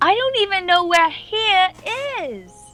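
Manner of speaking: mock high-pitched voice. Storyteller voicing Ori's reply, in a louder voice. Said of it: "she replies back in like a louder voice".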